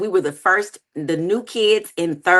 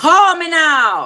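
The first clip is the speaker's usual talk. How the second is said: put-on high, loud, raised Jamaican accent; 8 semitones higher, 5 dB louder than usual. Ending a playful promo for a team event, Miss Cleo Jamaican accent. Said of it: "that's your Jamaican accent".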